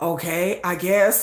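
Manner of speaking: put-on deadpan voice. Describing banter between two people, imitating Sugar's deadpan. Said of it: "Sugar's very deadpan".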